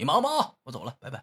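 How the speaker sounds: fed-up, impatient, annoyed, irritated brush-off tone. Illustrating saying goodbye to him while he's busy, annoyed tone. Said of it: "当然是带那种很烦的口气".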